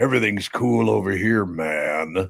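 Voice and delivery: put-on deep radio announcer voice, drawn out. Retelling sitcom cops trying out radio: imitating a deep radio voice. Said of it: "they got really deep voices".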